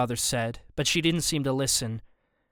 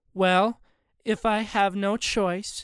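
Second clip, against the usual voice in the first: totally insincere put-on tone, high and slow; 7 semitones higher than usual. Reading a story where the girl agrees to go: fake tone. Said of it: "in a tone that sounded totally fake".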